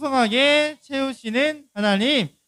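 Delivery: big loud voice, slow, reading aloud.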